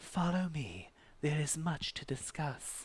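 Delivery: gentle calming tone. Narrator voicing Etheria, daughter of Minos, speaking to the listeners: Etheria's soft, soothing voice. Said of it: "she tells you in a soft, soothing voice".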